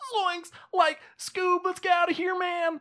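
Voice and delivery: full cartoon character voice, very high-pitched. Trying out a voice on mic for the first time, Shaggy voice. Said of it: "I can do a Shaggy voice".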